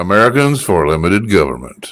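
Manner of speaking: very low, put-on, fake sexy voice. Repeating the organization's name back to the other speaker: putting on a sexy voice. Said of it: "that's a sexy voice".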